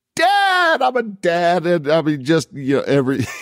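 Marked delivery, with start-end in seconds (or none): 0.2-1.7 very high, long, stretched-out scream. Retelling what a man in Crocs screamed as he walked out: imitating someone screaming. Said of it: "he just screamed".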